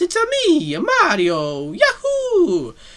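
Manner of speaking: very high, sing-song, swooping, drawn-out voice. Quoting a video-game character's line and rating the impression; Mario impression. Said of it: "rate my Mario impression".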